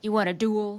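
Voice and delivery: put-on Western cowboy accent. Retelling what a character said at a dance, imitating Jake's Western accent. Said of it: "what was that accent for".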